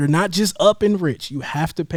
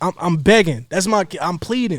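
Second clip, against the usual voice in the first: plain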